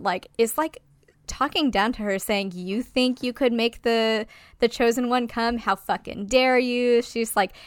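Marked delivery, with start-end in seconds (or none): none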